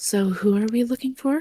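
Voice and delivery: stage whisper, quiet-ish. A player's character leans into the middle of the group, quiet stage whisper. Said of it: "quiet-ish stage whisper goes".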